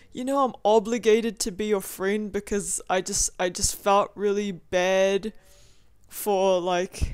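plain

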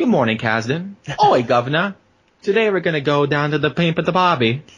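fake British accent with Australian slipping in. Speaker voicing his little buddy in the car greeting him, in a put-on British-Australian accent. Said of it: "I think you mix some Australian".

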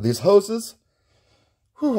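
out of breath. Speaker explaining a build setup while working, out of breath. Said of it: "I'm out of breath".

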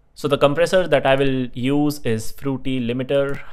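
usual speaking voice

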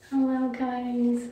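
put-on cutesy voice, "guys" drawn out. Answering a comment about the speaker's voice, demonstrating a fake cute voice. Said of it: "If I talk like this".

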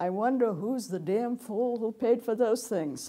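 very loud, carrying voice. Retelling what an undergraduate on the courtyard wall said: a very loud remark. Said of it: "he said in a very loud voice".

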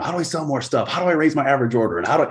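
high, fast, mock eager voice. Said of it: "getting questions left and right about stuff that I didn't give a shit about".

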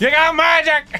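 loud yelling. Playing a game, yelling advice at another player: yelling. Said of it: "How loud do I have to yell it?".

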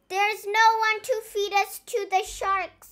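jubilant, high, cheering pirate shout. Narrator voicing one of three pirates cheering together, shouted. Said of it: "shouted Naughty Paul".

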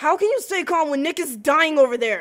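desperate, frantic, very loud, high screaming. In a scene, told to stay calm while someone nearby is dying, screaming. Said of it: "I'm so sorry".

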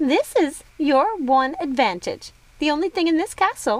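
ordinary delivery, nothing marked

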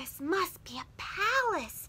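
gasped words. Narrator reads Corduroy seeing the furniture floor, gasping. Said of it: "Corduroy gasped".

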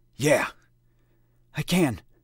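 words squeezed out with effort. Reading a story, Adam answers Foster between pull-ups: words choked by exertion. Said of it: "he finished between pulls".

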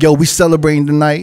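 ordinary talk

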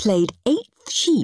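ordinary delivery

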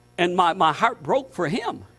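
ordinary talk

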